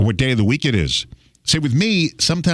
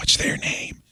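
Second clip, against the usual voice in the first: hushed whisper under the breath. Retelling asking someone at the front for a name: imitating a whisper. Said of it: "So I'll whisper to somebody".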